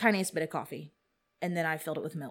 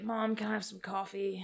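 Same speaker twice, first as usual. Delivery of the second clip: put-on groggy, barely awake old man voice; 4 semitones higher, 4 dB quieter than usual. Mom retelling her seven-year-old asking for coffee, imitating a half-asleep old man. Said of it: "all like half asleep, like an old man".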